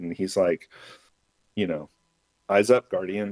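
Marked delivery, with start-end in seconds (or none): none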